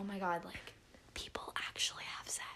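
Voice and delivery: fast, low-volume, stunned, awed whisper.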